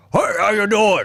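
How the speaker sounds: booming, very high-pitched comedic voice. Mimicking a fun comedy guy booked on the show: booming comedic voice impression. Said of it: "he has a very booming comedic voice".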